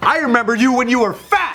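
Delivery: loud high-pitched yelling. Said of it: "he just yelled at Anthony".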